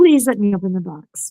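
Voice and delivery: ordinary talk, nothing marked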